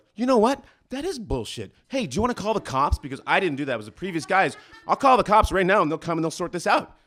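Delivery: shrill, loud, high, heated angry delivery. Retelling how they answered an upset neighbor: mock-angry retort. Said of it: "when someone comes at you and you're angry, you just match it".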